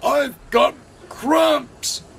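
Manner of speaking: high-pitched groaning. His driver urges him on, but he cannot move; he replies, groaning. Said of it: "groaned Gordon".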